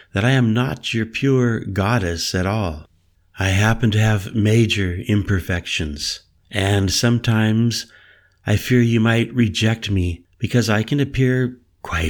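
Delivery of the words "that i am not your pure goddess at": plain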